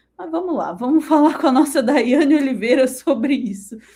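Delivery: loud, laughing while talking. Handing over to a colleague on the topic, laughing while talking. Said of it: "tô dando risada".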